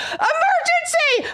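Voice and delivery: very high, full-out screamed cry. Retelling running into a gas station for help: imitating own past screaming. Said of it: "And I'm screaming at this".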